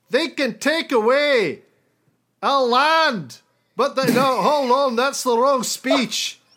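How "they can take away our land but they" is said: slow, put-on Scottish preacher brogue. Giving a speech about freedom in a put-on accent. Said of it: "when I get into this accent".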